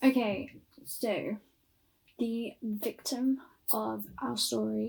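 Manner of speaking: voice breaking and cracking at the start of the phrase. Beginning to tell the story to listeners, voice cracking. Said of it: "voice crack".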